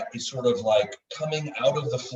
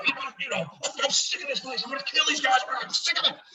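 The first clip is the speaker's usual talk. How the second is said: very high, furious, raging tirade; 14 semitones higher than usual. Voicing a character rushing past the others, angry shouting as a character. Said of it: "He's raging".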